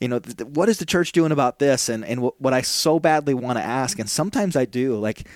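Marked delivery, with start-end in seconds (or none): 0.5-1.9 mock heated, earnest, fired-up, passionate delivery. Retelling how a questioner asks about the church: imitating a fired-up, passionate asker. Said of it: "usually fired up and really passionate".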